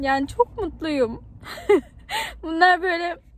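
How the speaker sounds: happy weeping. Sharing an emotional moment with the audience from the car, crying tears of joy. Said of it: "Bunlar gerçekten mutluluk gözyaşları".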